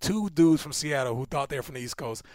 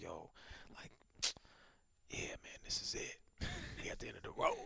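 put-on breathy, hushed, choked-up near-whisper; 8 semitones lower, 18 dB quieter than usual. Recounting a moment with Thugga near season's end, imitating Thugga choked up. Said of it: "he got choked up".

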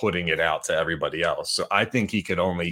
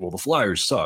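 put-on sardonic, mocking tone. Retelling a team employee's remark during a press question: imitating sardonic mocking. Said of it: "mocking the question, being sardonic".

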